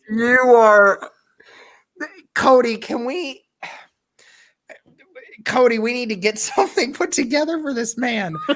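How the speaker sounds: tearful, near crying. Watching a clip, asking Cody to help put something together, choked up, near tears. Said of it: "Are you crying?".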